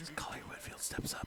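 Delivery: hushed, very quiet voice. After calling for quiet, narrating a player's step in a very quiet voice. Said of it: "we don't need to start talking like this. Very quietly".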